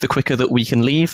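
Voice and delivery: ordinary talk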